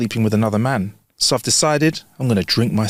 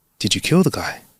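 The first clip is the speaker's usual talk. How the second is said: nervous, on-edge voice. Telling a joke, the bartender questions the man who walked back in; nervous. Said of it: "The bartender says nervously".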